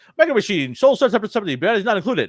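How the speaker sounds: words rattled off as fast as possible. Speaker recalling the fast-talking guy from old commercials, doing a Micro Machines fast-talker impression. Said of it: "he could talk really fast and be like".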